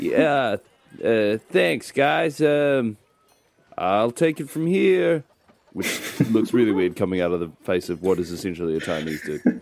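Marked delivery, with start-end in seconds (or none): 0.0-5.2 bad exaggerated New York accent, high, very slow. Quoting someone jumping into the driver's seat, in a bad New York accent. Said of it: "in an equally bad New York accent".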